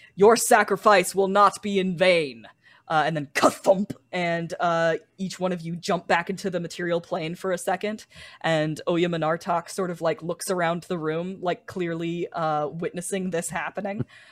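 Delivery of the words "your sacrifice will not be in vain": very loud, thundering, booming god voice. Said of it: "a loud booming voice".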